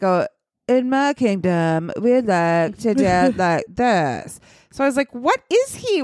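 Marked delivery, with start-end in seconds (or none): 0.0-4.4 put-on surfer dude accent, much lower. Describing a performer's hard-to-place accent in a role: imitating a surfer-dude voice. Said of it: "is he trying to be a surfer dude?".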